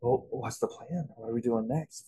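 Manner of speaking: soft, sultry, play-acted seductive voice, laid on thick. Retelling how a woman leaned in during a drive: imitating a seductive voice. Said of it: "Like it was seductive".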